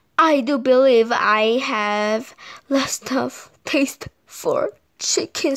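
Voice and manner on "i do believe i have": ordinary delivery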